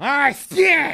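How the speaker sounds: very high, very loud, shrill fake sneeze. Showing how annoying a sneeze is: fake sneeze. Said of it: "As annoying as sneezing, like this".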